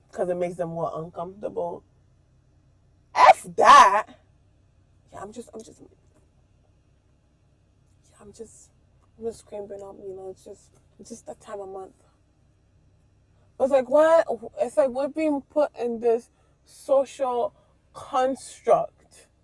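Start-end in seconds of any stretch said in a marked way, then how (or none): 5.1-11.9 hushed, breathy, halting whisper. Imitating women who hide their periods around guys: imitating someone whispering. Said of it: "whispering it".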